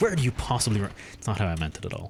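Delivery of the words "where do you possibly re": play-acted disbelieving, incredulous tone that breaks off abruptly. Repeating a line just said wrongly: imitating own incredulous tone. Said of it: "I was saying it, like, incredulous".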